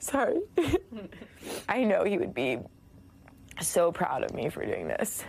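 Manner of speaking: halting, tearful, crying voice, breaking. Sharing an emotional story with viewers, the speaker addresses her Zadie, crying.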